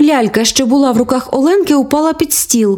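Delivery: ordinary delivery, nothing marked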